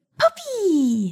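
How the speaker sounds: very high-pitched, drawn-out squeal of pure delight. Reading a girl's line as she sees the dog, squealing with delight. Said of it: "The girl squealed with delight".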